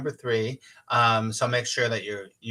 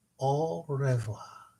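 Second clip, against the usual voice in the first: very slow, deliberate, drawn-out delivery; 3 semitones higher, 3 dB quieter than usual. Signing off, repeating a French goodbye for everyone; said very slowly. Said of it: "I'll say it very slowly".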